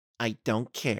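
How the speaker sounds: whispered close, soft and quiet. The narrator answers Camilla, whispered into her ear. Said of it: "I whispered into her ear".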